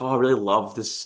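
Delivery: ordinary delivery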